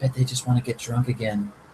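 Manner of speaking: soft, half-whispered delivery. Narrating a scene, Brightheart jabs Guile in the side and says: half-whispering. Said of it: "she kind of whispers".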